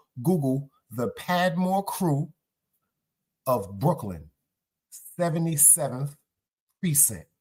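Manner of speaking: very slow, each word spaced out, deliberate. Repeating a name so listeners can look it up, said real slow. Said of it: "I'm going to say it real slow".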